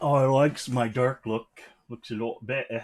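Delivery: put-on, laid-on attempted British accent. Talking about making the room darker: put-on British accent. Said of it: "That's my British accent".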